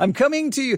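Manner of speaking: squeaky high voice crack, jumping way up mid-phrase. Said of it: "My voice went up, what, three octaves".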